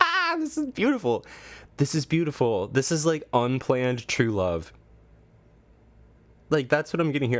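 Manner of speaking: emotional, tearing-up gush. Talking to viewers, moved by an unplanned love story, the speaker is tearing up. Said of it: "I'm literally tearing up".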